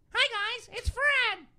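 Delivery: very high, loud, squeaky chipmunk voice. Arguing that Fred is a cartoon, the speaker mimics him: Fred chipmunk voice. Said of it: "He's got the chipmunk voice".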